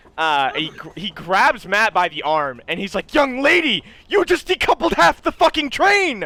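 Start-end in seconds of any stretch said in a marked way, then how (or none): 3.2-6.3 panicked voice, higher and louder. Voicing a train conductor who sees the train decoupled: conductor freaking out. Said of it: "he starts freaking the fuck out".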